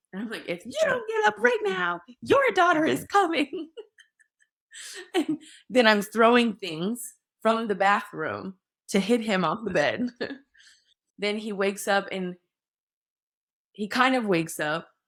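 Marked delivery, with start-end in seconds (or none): 0.4-3.7 mock, very high-pitched, full-lungs top-of-lungs shriek. Recounting screaming at a man on the bed to get him up, retelling a top-of-lungs scream. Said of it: "I just started screaming, like at the top of my lungs".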